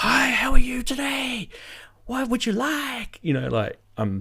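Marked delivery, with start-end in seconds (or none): 0.0-3.2 very high-pitched, overly keen, over-eager chirp. Retelling ordering food, the speaker imitates the girl behind the counter greeting them; over-enthusiastic. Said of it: "the really over enthusiastic girl behind the counter".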